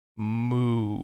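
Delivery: sinister, wicked, fiendish, drawn-out cow's moo. Voicing a hell cow that points at a player: very fiendish tone. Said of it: "in a very fiendish tone".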